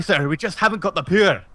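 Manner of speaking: loud Scottish engineer voice. Attempting a Star Trek impression while chatting with friends, Scotty from Star Trek impression. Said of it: "Scotty from Star Trek".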